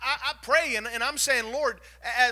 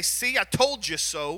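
slow, drawn-out, sarcastic little dig; 5 semitones lower than usual. Imagining saying it to someone sitting with a mess: mock sarcastic voice. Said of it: "that sarcastic voice".

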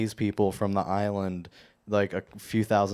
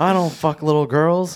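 put-on man's scream, higher and louder; 8 semitones higher, 8 dB louder than usual. Retelling what Alex Jones said on his show: imitating Alex Jones screaming. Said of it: "he's just, like, screaming".

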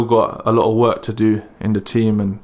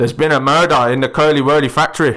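best-try put-on Geordie accent; 4 semitones higher than usual. Urged by the others to give it a go, attempted Geordie accent. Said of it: "That's the best one I can do".

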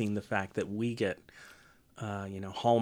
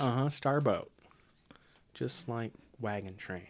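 ordinary talk, nothing marked

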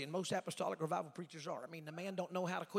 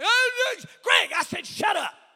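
put-on scream, higher and louder; 13 semitones higher, 16 dB louder than usual. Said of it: "I'm crying".

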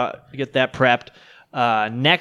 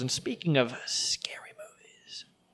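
very quiet, slow, hushed whisper; 13 dB quieter than usual. Podcast host moving from box office numbers to scary movies: whispering. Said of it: "I'm whispering that just so you know".

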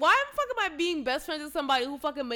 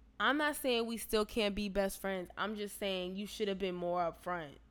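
normal talking voice

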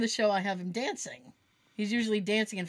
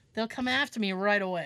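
usual speaking voice

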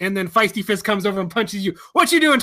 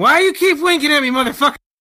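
play-acted, high-pitched, loud shouted outburst; 5 semitones higher than usual. A player recalls yelling during a game, retelling a loud yell. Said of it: "I remember loudly yelling".

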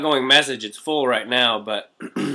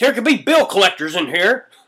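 acted very high, loud, pissed-off dad outburst; 9 semitones higher, 6 dB louder than usual. Retelling a dad paged at the store: imitating an angry dad. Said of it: "he would always get pissed off at me".

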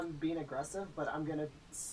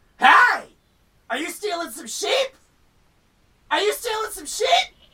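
shrill, very high, very loud holler; 14 semitones higher, 19 dB louder than usual. A player's character yells back at a man seen with the tracked sheep, yelling. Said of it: "I'm gonna yell back".

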